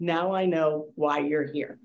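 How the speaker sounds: put-on dry, expressionless, flat deadpan delivery. Recounting a dinner, the speaker quotes the reply to their question, retelling a deadpan reply. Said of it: "and deadpan".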